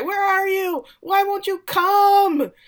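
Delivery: acted, very high, stretched-out howling scream. Retelling a priest who goes outside and calls up at the sky: imitating someone screaming. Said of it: "he just screams at the sky".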